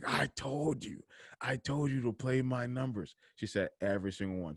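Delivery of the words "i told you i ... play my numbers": acted-out furious cursing, high and angry. Retelling a woman cursing out her husband: imitating someone cursing angrily. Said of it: "She said she was cursing him out".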